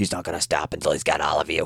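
low, dropped-down, possessed horror voice. Retelling a scene, quoting a possessed character's threat: Exorcist voice. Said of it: "Exorcist voice".

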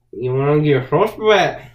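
poor attempt at a Scottish accent, loud. Speaker reluctantly attempts a regional accent for a friend, expecting to do it badly. Bad, put-on Scottish accent. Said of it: "for me trying to actually do an accent".

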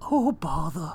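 storybook bear voice, sighed out. Demonstrating a voice during a segment, in a Winnie the Pooh voice. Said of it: "I can actually do Winnie the Pooh's voice".

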